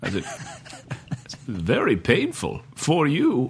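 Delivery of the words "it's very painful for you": very slow villain voice, every word stretched and swooping. Retelling quoting a movie line to a Batman fan, in a Bane voice. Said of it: "I just started doing my Bane voice".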